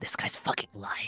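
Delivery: whispering. Playing a character who whispers to another player: whispering in character.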